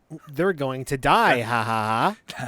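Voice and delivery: mock VIP voice, slow, loud, smug drawl.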